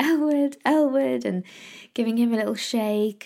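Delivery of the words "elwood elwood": mock shouting at full volume, loud and high-pitched. Speaker recounting trying to wake an exhausted elwood, retelling shouting his name. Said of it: "literally shouting at him".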